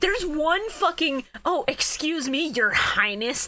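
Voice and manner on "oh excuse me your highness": put-on spiteful voice, higher pitch. Quoting a favourite line from the show: spiteful Yugi line. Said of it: "that was just so full of spite".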